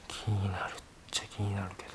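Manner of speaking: soft, hushed whisper.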